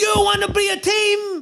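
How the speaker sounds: very slow, high-pitched, in-your-face yell. Retelling someone getting right in a player's face: imitating someone yelling. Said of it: "he's yelling in Nuno's face".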